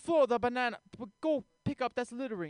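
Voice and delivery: imitated Russian accent. Retelling a neighbor on a balcony scolding about littering: imitating a Russian accent. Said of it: "he has a Russian accent".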